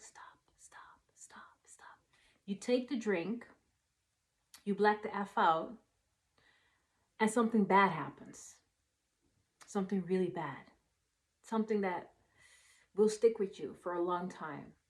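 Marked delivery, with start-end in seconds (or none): 0.0-2.0 whisper, much quieter. Acting out the inner voice warning against that last drink, whispering. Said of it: "that voice that whisper like".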